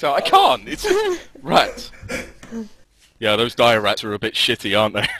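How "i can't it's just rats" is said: breaking into laughter, very high voice. Trying to stay in character as the guard, laughing while talking. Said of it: "I'm trying to keep serious, to be in character".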